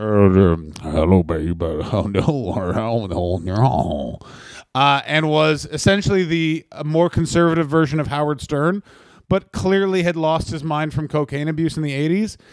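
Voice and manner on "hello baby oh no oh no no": very deep voice, dragged out and slow. Describing a radio host, then doing his voice: Don Imus voice. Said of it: "this is his voice".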